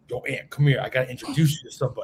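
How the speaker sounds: friendly, buddy-like voice. Retelling how a friend called him over, imitating Edgar's voice. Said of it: "You sound just like Edgar".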